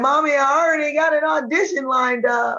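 high, slow, tearful crying voice. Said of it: "I was like".

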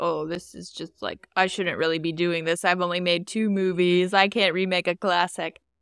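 usual speaking voice

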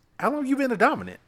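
quick, high, inquisitive voice. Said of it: "She's like, she looks over".

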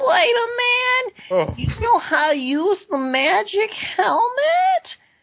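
put-on very high, slow, drawn-out little girl voice. Reading out the little girl's comic line, as promised: impression of the little girl. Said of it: "I'll do an impression".

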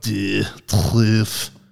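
put-on heavy, dripping French accent. Recalling a man saying it in my ear every day: heavy French accent. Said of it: "he just had this like dripping French accent".

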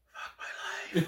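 mock under-the-breath mutter. Quoting a woman overheard, imitating a mutter under her breath. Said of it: "Under her breath".

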